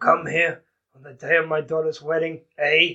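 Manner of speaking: mob boss voice with a Canadian accent. Joking about a whiskey drink, doing a Canadian Godfather voice. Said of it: "Will this be like a Canadian Godfather?".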